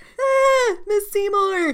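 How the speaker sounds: very high, nasal, terribly botched yell. Imitating a character yelling in an episode: imitating Henry's terrible nasal yell. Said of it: "He yells terribly".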